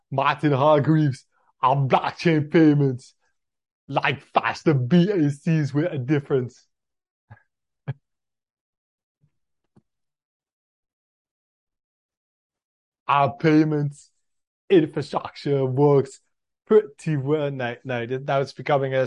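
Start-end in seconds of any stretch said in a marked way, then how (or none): 0.1-17.5 loud put-on Austrian accent, BACs stretched long. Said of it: "Could you do his accent for a bit".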